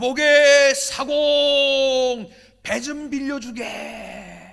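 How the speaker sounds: very loud, slow, high shout.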